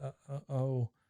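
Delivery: let-down, faltering, deflated sound of disappointment. Retelling a cartoon scene, quoting Luann: imitating Luann, disappointed. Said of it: "She is so disappointed".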